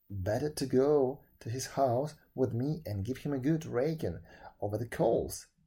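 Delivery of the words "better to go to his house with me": ordinary delivery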